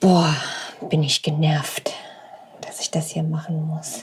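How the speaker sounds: soft whisper under the breath. Talking into the mic for a level test, whispering. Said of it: "Why are you whispering?".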